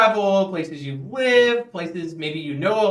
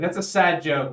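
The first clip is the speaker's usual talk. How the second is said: plain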